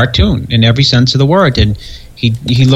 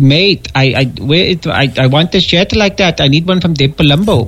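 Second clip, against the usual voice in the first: put-on Pakistani accent, higher-pitched; 4 semitones higher than usual. Retelling a phone call from Masoom: Masoom's Pakistani accent. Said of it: "in his Pakistani accent".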